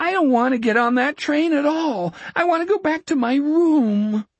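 very high-pitched, whiny, cringing whine. Narrator voicing Richard answering Jack, cringing, whining tone. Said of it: "that cringing, whining tone came back into his voice".

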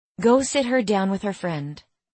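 ordinary delivery

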